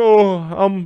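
high-pitched, words through full sobs. Retelling a guy who came on during a bit, imitating someone crying. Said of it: "full crying and saying".

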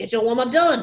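fake French accent. Retelling saying a student's instruction again "in French": fake French accent. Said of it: "say it in French".

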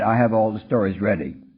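normal talking voice

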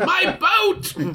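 screaming voice. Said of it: "as Le Capitan screams".

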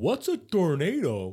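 slow, dumb slack-jawed voice. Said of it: "with his mouth open like".

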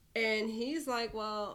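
ordinary delivery

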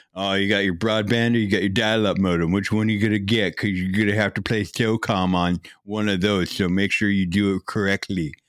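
nerdy clerk-like voice. Imitating a salesperson asking which modem you'll get, in the GameStop nerd voice. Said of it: "This is the GameStop nerd voice".

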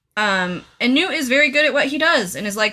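ordinary talk

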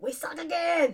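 squeaked out, poorly done. Joking about the team's prospects, doing a bad Rob Schneider impression. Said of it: "it's a bad impression".

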